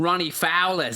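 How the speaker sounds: Australian accent. Asked for something typically australian, the speaker answers in an australian accent. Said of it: "say it with an Australian accent?".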